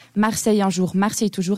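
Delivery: normal talking voice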